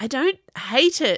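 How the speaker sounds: high, sudden, blurted-out delivery. Answering his brother after pulling his pillow away, blurting it out. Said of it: "Chase blurted".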